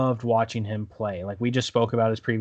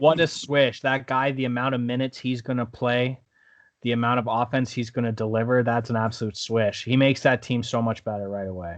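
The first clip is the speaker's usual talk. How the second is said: ordinary talk, nothing marked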